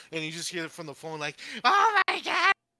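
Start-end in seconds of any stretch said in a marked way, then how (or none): 1.6-2.5 high, loud, frantic yelling. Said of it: "she's, like, yelling".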